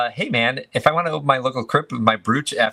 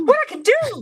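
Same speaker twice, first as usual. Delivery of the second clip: very high, squeaky voice. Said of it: "in the high-pitched voice".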